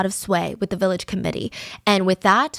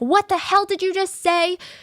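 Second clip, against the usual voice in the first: mock screaming, very high-pitched and furious; 11 semitones higher than usual. Retelling a neighbor quarrel, acting out the reply: imitating someone screaming back. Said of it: "She would scream back at them like".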